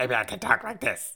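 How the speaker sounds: very high, squeezed, creaky character voice. Dodging a request for an Irish accent, doing a Heinz Doofenshmirtz voice. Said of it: "Like Heinz Doofenshmirtz".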